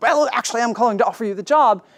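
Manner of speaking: poorly done put-on British accent. Retelling the job-offer phone call, quoting the caller in a really bad British accent. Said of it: "I do really bad British accent".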